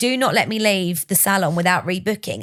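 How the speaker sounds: ordinary talk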